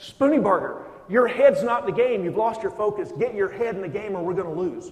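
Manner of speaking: fierce, shrill, very loud rebuke. Addressing two listeners, acting out what others tell him, mock fierce, ferocious voice. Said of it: "in a fierce and ferocious voice".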